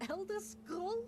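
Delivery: incredulous, disbelieving tone.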